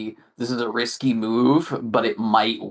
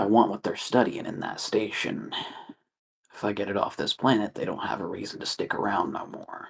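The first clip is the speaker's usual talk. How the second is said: conspiratorial whisper, voice dropped soft and low; 2 semitones lower, 7 dB quieter than usual. Leaning in after checking no one is listening, lowered voice. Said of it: "lowers her voice".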